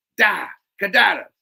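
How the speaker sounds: fuming scolding call. Reading a story aloud, a character stops another mid-rant: steamingly, like a parent scolding a tantrum. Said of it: "as a parent speaking to a child mid-tantrum".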